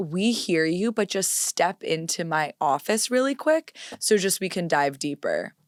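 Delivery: ordinary talk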